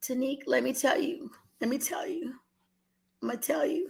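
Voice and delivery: soft, choked up, holding back tears. Speaker addresses Tanique, holding back tears. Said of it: "I'm not gonna cry".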